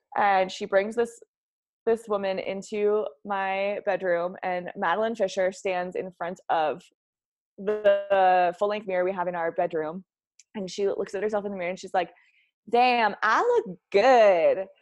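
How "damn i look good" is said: very slow, swooping Tennessee Southern drawl. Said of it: "little Tennessee Southern accent".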